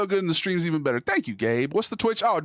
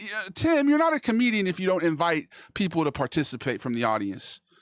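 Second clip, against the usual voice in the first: ordinary delivery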